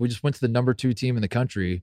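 ordinary talk

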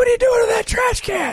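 put-on shout. Retelling yelling out at the other speaker: imitating own past yell. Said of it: "I was yelling out".

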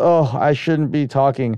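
usual speaking voice

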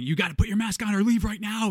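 very high, loud screaming voice. Retelling how a manager ran into the bathroom at a customer: imitating a manager screaming. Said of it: "just starts screaming".

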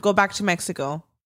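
ordinary delivery

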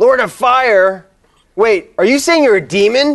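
high character voice, called out across a distance. Voicing characters answering a threat in a game: yelling back in character. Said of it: "so they yell back".

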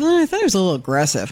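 normal talking voice

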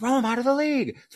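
mock, very high, shrill, unhinged, repeated screaming. Retelling how Russo went off about a player still being in the league, imitating Russo screaming.

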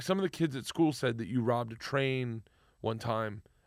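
usual speaking voice

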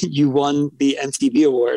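ordinary delivery

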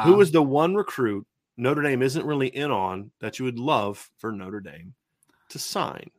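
slow, deliberate reading, word by word. Reading a question aloud to a guest so he can think, slow, deliberate reading. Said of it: "I'm going to read this slowly".

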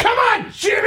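play-acted, very high-pitched yelping call. Retelling a comedy skit about a youth baseball parent: imitating Will Ferrell screaming at his kid. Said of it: "he'll just start screaming at his kid".

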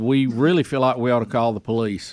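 ordinary talk, nothing marked

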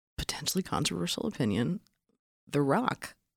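hushed, confiding, dropped-down voice.

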